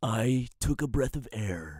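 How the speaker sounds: proud, even, smooth narrator voice. Continuing a playful narration of this saturday evening, in a narrator voice. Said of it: "I take pride in my narrator voice".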